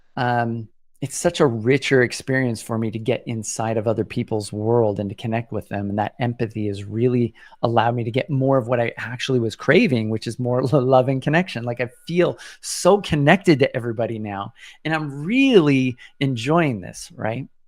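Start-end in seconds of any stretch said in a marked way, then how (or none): 11.7-17.5 audibly thrilled and enthusiastic, bright excited voice. Speaker describing feeling connected to everybody now, in an excited voice. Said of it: "you can hear the excitement in my voice".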